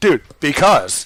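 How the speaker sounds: brash, cocky, aggressive know-it-all swagger. Acting out a person repeating the smart guy's claims, mock-confident and aggressive. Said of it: "a little more confidence, a little more aggression".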